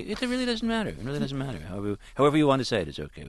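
high, breezy, casual, nonchalant voice.

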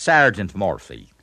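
loud Dublin Irish accent with retroflexed, curled R's. Demonstrating regional Irish pronunciation to listeners, in a Dublin Irish accent. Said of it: "in the Dublin dialect".

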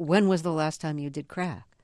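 ordinary delivery

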